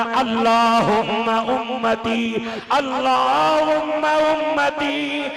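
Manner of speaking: slow, rising, weeping pleading tone.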